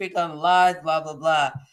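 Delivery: plain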